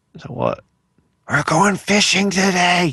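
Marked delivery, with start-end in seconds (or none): 1.3-3.0 put-on higher, slow, excited little boy voice.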